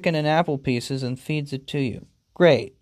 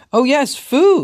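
eager, excited burst, very high-pitched; 10 semitones higher, 8 dB louder than usual. Narrating a story game, voicing the man answering the cat, excited. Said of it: "he says excitedly".

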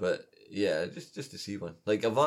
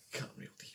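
put-on creepy whisper, quieter. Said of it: "It's just creepy whispering".

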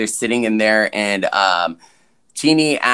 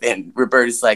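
usual speaking voice

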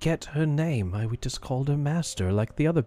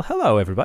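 raised, put-on talking owl voice; 3 semitones lower, 5 dB louder than usual. Voicing an owl that has just landed on the dog sled: talking owl character voice. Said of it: "And he looks towards you and says".

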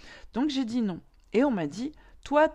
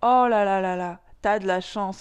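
loud, really dumb, dopey put-on voice; 6 dB louder than usual. Mimicking how people say you're lucky, in a silly put-on voice. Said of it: "je le fais avec une voix vraiment débile".

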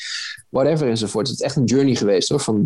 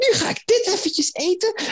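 put-on very high, childlike, kids-show style little voice. Imitating candy-tasting videos in children's content, high little voice. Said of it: "met dat hoge stemmetje zo van".

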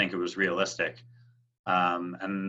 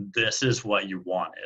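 mimicked defeated voice. Recalling saying it aloud to yourself, imitate your own defeated tone. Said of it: "in this like defeated tone".

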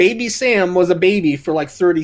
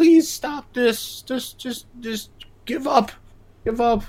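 put-on begging, quieter, slower, higher pitch; 7 semitones higher, 3 dB quieter than usual. Recounting a TV episode where characters plead with the queen, mock begging. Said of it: "they go begging".

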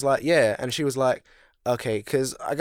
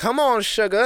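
put-on woman's voice, much higher, slower; 7 semitones higher, 3 dB louder than usual. Retelling how a man imitated a woman in front of workers, imitating her voice. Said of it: "And then he started imitating her".

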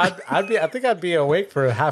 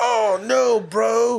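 put-on Californian accent; 6 semitones higher than usual. Imitating a woman they are describing, in a Californian accent. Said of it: "She had a Californian button".

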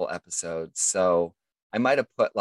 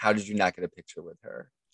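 normal talking voice

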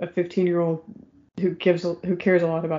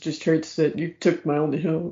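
ordinary delivery

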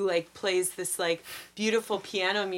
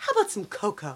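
sudden switch to bright, sunny cheer. Retelling a scene where a character abruptly switches gears: Meryl with a huge smile. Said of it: "puts on a huge smile".

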